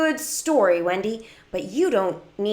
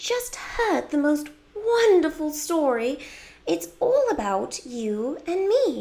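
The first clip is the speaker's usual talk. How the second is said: put-on British accent, pitched up; 7 semitones higher than usual. Wendy speaks to a companion, Wendy's British accent. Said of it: "I love doing the British accent for Wendy".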